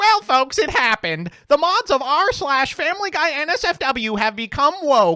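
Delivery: very high, very loud, shrill, drawn-out put-on voice. Speaker reading a post aloud, put-on character voice. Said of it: "Let me actually see if I can do it in the voice".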